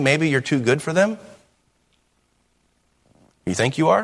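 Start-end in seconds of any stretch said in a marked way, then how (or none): none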